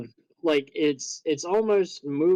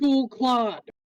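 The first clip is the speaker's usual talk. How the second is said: distant shout, higher pitch; 10 semitones higher than usual. Voicing someone heard shouting in the distance: distant shout. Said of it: "You definitely hear somebody shout".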